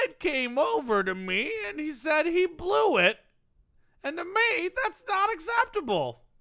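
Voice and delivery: goofy high-pitched voice. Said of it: "That's what a person named Norv would sound like".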